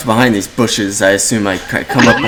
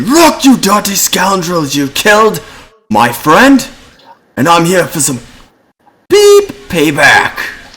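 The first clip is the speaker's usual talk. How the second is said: high, swooping, menacing, intimidating shouted yell; 6 semitones higher than usual. A character yells over a gate back at a hostile stranger: yelling intimidatingly. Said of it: "I yell over the gate back to him".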